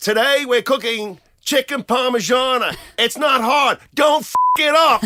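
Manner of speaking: very high, very loud, shrill cooking-host yell. Imitating a cooking video host on Instagram: imitating a yelling cooking video host. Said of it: "he yells and he'll be like".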